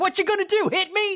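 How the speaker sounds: mock, shrill, very high shouted yell. Retelling crossing a parking lot in front of a car: imitating own past yell. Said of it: "is what I yelled".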